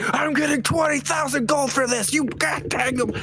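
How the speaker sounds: very high, shrill, all-out yell. Predicting what Ham will shout at the other two, acting out Ham yelling. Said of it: "Literally just yelling it".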